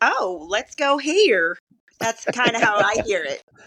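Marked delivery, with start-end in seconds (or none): 0.0-1.6 put-on North Carolina accent, very slow, stretched drawl. A speaker imitates how her friend from North Carolina talks, imitating a North Carolina friend. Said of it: "she always says".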